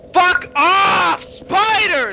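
furious yelling. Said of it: "just stop yelling".

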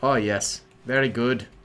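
put-on slipping into a slight Irish accent. Player voicing a soldier in a game, slipping into a little irish accent. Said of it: "I went a little Irish there".

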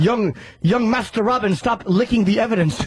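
scolding, telling-off voice in butler style. Retelling a butler scolding Robin: imitating Alfred scolding. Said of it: "Alfred would come in and scold him".

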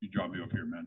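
very low voice. Retelling what the son said when dropped off: imitating son's lowered voice. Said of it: "lowers his voice".

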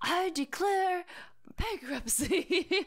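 play-acted, very high, big top-of-lungs yell. Recounting a favourite scene of the show, retelling Michael's top-of-lungs yell. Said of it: "he like yells it at the top of his lungs".

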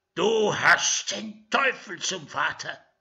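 loud, high, hurled outburst. Reading the Holy Father flinging a curse after a cheeky boy being dragged away. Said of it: "warf dem frechen Jungen noch einen Fluch nach".

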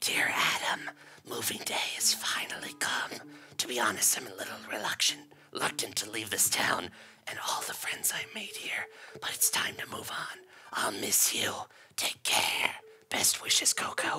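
weird, eerie, creepy whisper. Reading Coco's farewell letter to Adam, in Coco's weird, whispery, creepy voice. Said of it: "we're going to do Coco's weird, whispery, creepy voice".

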